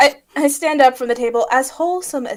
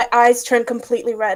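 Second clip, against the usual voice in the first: ordinary delivery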